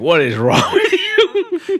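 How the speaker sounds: very high, slow, mock incredulous disbelief.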